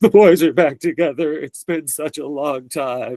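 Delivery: weepy, tearful voice. Retelling what the mom said as she started crying: imitating a mom crying. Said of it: "and the mom starts crying".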